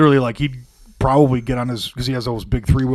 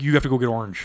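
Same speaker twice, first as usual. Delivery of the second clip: put-on flat, matter-of-fact voice; 4 dB quieter than usual. Imitating Jack's reply in a story about him: very matter-of-fact imitation. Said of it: "very, very matter of fact".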